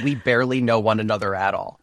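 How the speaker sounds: ordinary delivery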